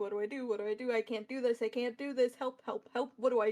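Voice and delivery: muttering with anxiety. Voicing the king muttering to himself, vibrating with anxiety: anxious muttering king. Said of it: "muttering to himself".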